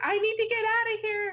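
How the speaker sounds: shrill, frantic, very high panicked scream. Retelling a scary funhouse maze where the other person screamed: imitating someone screaming in panic. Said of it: "she's screaming".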